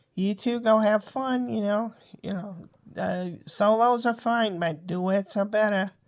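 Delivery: put-on New York accent. Reading the audition part of Aunt Jacqueline, called Jake; New York type accent. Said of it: "New York type accent".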